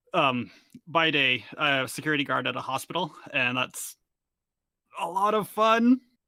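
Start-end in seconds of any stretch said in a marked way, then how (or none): 3.3-6.0 pitched-up, squeezed out through clenched, gritted teeth. Making small talk, one character answers another: through gritted teeth. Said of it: "I said through gritted teeth".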